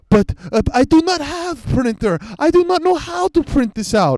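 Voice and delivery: put-on, very high, slow Eastern European accent. Retelling what an old foreman answered her, imitating an Eastern European accent. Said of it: "He's like Eastern European or something".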